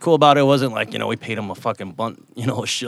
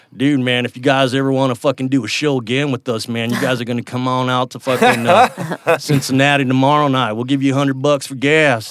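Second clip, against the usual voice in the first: put-on broad, thick, full-on Texan accent; 3 semitones higher, 4 dB louder than usual. Quoting people who offered another show after a gig: total Texan accent. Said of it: "they were like this in total Texan accent".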